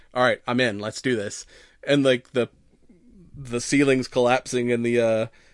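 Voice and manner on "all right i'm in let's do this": normal talking voice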